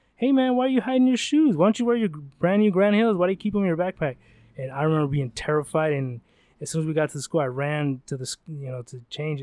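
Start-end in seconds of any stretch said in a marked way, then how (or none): 0.2-4.2 high, full-lunged holler. Telling a school story, quoting a friend on the bus, imitating his yell. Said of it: "he just yells at the top of his lungs like".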